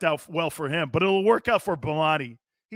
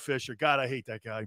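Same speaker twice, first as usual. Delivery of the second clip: ordinary delivery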